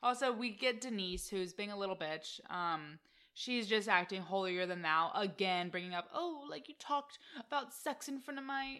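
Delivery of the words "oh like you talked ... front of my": high, fake, mock British accent. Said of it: "I don't know why I'm giving her a British accent".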